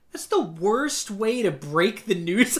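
ordinary talk

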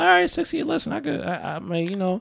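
very high, nervous talking to oneself. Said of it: "I'm like".

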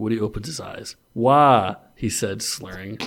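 ordinary delivery, nothing marked

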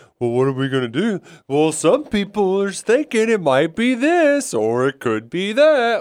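big, swooping, hammed-up put-on dad voice. Showing how he reads those lines the way his dad would, big exaggerated dad voice. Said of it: "with that big exaggerated voice".

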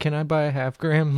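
ordinary talk

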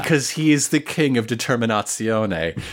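ordinary talk

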